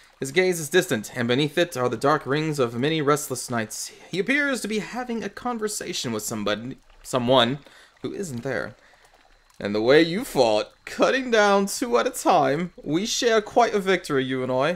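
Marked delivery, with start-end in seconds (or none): 9.6-14.8 put-on accent of a hobbling old man, pitched high. Narrator voicing a man talking to someone who isn't there, put-on accent. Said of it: "I'm not sure why I went into this accent".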